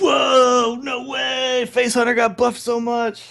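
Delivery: over-awed, hyped gushing, very high, very slow, drawn-out. Imitating what everybody was saying about a card: imitating others' hyped excitement. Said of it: "That's what everybody was saying".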